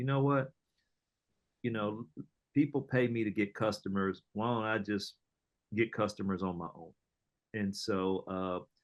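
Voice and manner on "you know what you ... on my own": usual speaking voice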